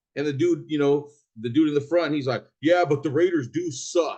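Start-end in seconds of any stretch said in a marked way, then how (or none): 2.6-4.2 snide, mocking, sarcastic, tossed-off tone. Retelling a remark by the dude in the front: imitating a sarcastic remark. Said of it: "he threw that out there, like, sarcastically".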